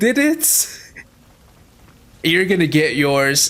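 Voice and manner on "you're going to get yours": normal talking voice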